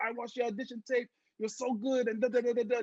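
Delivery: put-on French-sounding accent. Retelling a director's praise of an audition tape: imitating Guillermo's accent. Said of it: "I sound French".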